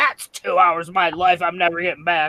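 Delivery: put-on loud, grumpy, cranky old-man grumble. Retelling a parent's verdict on a movie: imitating a grumpy old man. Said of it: "Just like a grumpy old man".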